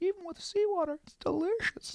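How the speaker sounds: very high-pitched whale voice. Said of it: "And he goes".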